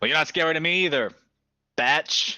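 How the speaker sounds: loud booming voice. Narrator voicing Ernest Blackguard answering a taunt, Ernest Blackguard bellowing. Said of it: "He bellows".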